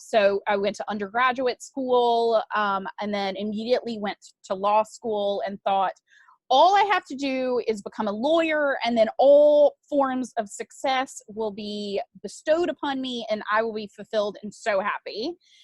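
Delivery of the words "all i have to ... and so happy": ordinary delivery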